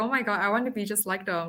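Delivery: ordinary delivery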